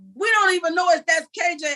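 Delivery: play-acted frantic screaming and yelling, high-pitched. A parent retells yelling at a police officer about a missing child; retelling a frantic yell. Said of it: "So I'm screaming and yelling".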